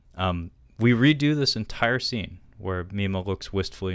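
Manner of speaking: ordinary talk, nothing marked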